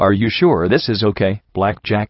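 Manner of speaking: ordinary talk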